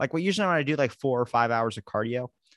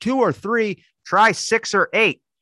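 very high, drawn-out scream; 10 semitones higher, 8 dB louder than usual. Retelling a buddy overhearing a phone call with a doctor: imitating someone screaming. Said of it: "And he screams it".

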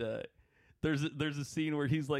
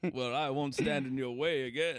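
put-on Victorian-era accent. Quoting a line from Garth Marenghi's Dark Place: imitating Matt Berry's accent. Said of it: "that guy's so fucking funny with that accent".

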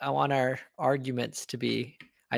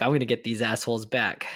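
acted-out angry, pissed-off tone. Acting out the kicked-out Raptor's threat: imitating someone pissed off. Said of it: "he was really pissed off".

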